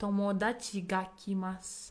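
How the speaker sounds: ordinary delivery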